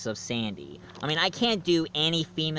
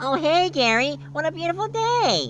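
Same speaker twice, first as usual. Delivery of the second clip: very high, full cartoonish sea-sponge voice; 13 semitones higher, 3 dB louder than usual. Showing off impressions, greet Gary in a SpongeBob SquarePants impression. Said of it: "my impression of SpongeBob SquarePants".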